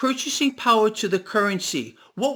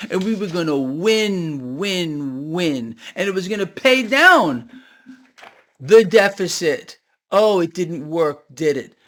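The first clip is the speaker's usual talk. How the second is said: openly mocking sarcasm, drawing out "win"; 3 semitones lower, 4 dB louder than usual. Mocking the promise that the tariffs would pay off: sarcastic. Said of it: "I'm being sarcastic here".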